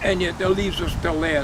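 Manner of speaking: usual speaking voice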